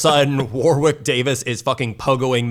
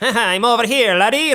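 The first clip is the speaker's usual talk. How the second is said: very high, impish, mischievous teasing voice; 10 semitones higher than usual. Retelling the kitchen whack-a-mole scene: Leprechaun impression. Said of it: "Where he's just like".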